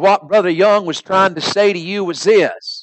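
put-on Southern Alabama preacher accent. Retelling a man addressing his church after a reading: Alabama accent. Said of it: "with his Alabama accent".

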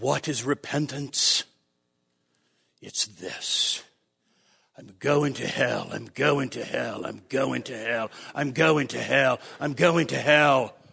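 very low, deep, resonant booming preacher voice.

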